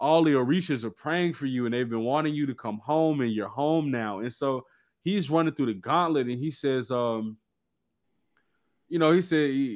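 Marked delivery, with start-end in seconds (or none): none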